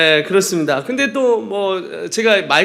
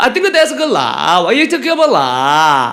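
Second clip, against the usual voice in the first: put-on Singaporean English accent, loud with swooping pitch; 5 dB louder than usual. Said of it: "싱가포르에 온 줄 알아요".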